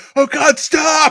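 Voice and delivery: very high, shrill, loud, pleading scream. Offering to add a sound effect for the edit: mock screaming voice. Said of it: "I'll do a voice of someone screaming".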